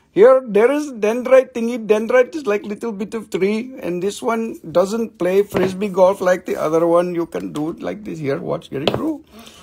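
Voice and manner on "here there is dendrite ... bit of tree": put-on Indian accent. Explaining what a dendrite is, in a put-on indian accent. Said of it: "We'll talk your Indian accent for you".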